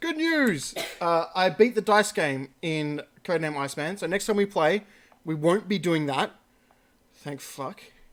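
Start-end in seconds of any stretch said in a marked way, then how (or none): 0.0-0.7 high, pitched-up cartoon professor announcement voice. Trying the voice again after urging himself: Farnsworth voice. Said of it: "do the Farnsworth voice".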